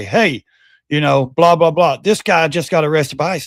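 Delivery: ordinary delivery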